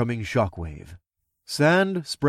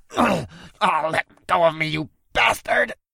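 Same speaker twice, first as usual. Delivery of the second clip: high-pitched snarling goblin voice; 5 semitones higher than usual. Narrating a fight, the goblin held up by the throat shouts at his captor; snarling. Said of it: "He snarled as he kicked feebly".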